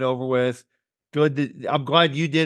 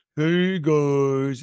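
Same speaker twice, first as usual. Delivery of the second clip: put-on slow, drawn-out, stuffed-up puppet-creature voice. Comparing own stuffed-up voice to a character: Snuffleupagus voice. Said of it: "the Snuffleupagus from Sesame Street".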